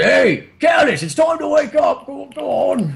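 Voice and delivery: very high, loud shout. Voicing a character who calls to Callus to wake up: shouting to wake someone. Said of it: "And he kinda shouts".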